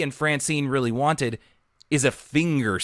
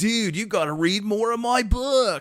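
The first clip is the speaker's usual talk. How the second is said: put-on teenage California accent, pitched higher; 8 semitones higher than usual. Retelling a book character's line: Loki Benedictson California accent. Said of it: "a teenager with kind of a California accent".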